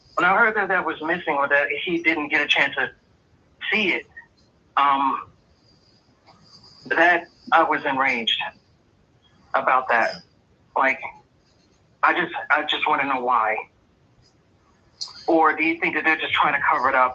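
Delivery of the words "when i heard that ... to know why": slightly emotional, earnest delivery with feeling showing through. Speaker, having just apologized, keeps asking questions, a little emotional. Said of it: "a little emotional".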